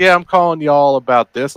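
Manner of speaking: put-on Texas accent. Showing how work calls sound to texas: imitating a texas accent. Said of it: "an imitation of a Texas accent".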